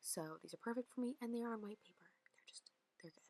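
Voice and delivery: hushed, barely voiced whisper. Showing top items in a video, the speaker talks while whispering. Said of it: "I'm like whispering so much in this video".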